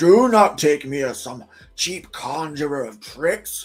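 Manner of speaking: put-on voice of an old wizard. Act out the wizard in the first bit of Lord of the Rings, in your best Gandalf voice. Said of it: "That's my best uh, Gandalf voice".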